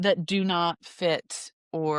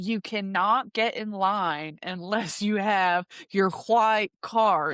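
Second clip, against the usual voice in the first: put-on slow, drawn-out scolding yell; 3 semitones higher than usual. Retelling a woman with cards at the line, imitating her yelling. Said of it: "she was just yelling at us".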